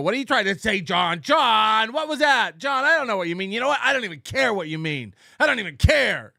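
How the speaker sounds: mocking, taunting put-on voice. Mocking a streamer who dismisses confusing chat messages: mocking Opie voice. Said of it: "I don't go into a voice and go".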